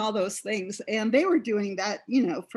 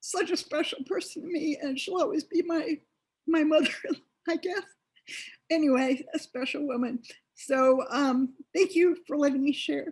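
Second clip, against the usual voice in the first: choked up, tearful, high crying voice; 6 semitones higher than usual. Sharing memories of a special woman, tearful, crying while talking. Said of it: "Sorry for the tears".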